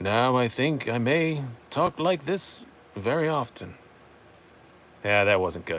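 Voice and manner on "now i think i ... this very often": put-on very slow, drawn-out old wizard voice. Trying a voice for the first time, Obi-Wan Kenobi voice. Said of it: "Second, I should have left it at the first one".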